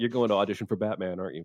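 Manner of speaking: flat, dry, expressionless deadpan delivery. Retelling a story where the director guesses the audition: imitating Christopher Nolan's deadpan. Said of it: "Nolan just deadpanned".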